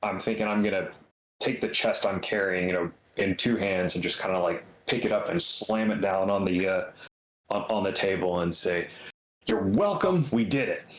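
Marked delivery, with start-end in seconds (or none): 9.5-11.0 excited, showy, attention-grabbing announcer-style voice. Slamming a chest onto the table in character: real loud, getting attention. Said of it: "just real loud, getting attention".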